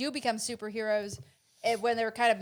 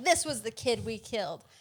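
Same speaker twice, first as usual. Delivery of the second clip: mock outraged, indignant, accusing tone. Retelling a movie scene, a hero showing a photo: imitating Tony Stark indignantly. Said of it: "he indignantly shows the picture to the rest of the Avengers and goes like".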